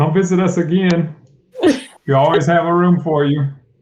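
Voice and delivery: high-pitched voice calling out. Pushing someone out the door, a player's character shouts back after them. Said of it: "I shout back".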